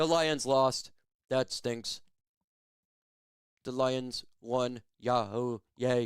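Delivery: put-on deadpan, flat and emotionless, zero feeling. Mocking fans who show no feeling about the game: mock emotionless voice. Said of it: "I have zero emotion".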